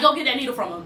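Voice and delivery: plain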